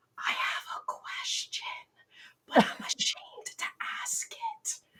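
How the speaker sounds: very quiet, hushed, breathy whisper. Retelling what a client said on a phone call: imitating a client whispering. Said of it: "then in a whisper".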